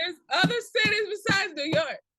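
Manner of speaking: high-pitched yelling. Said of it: "I'll stop yelling".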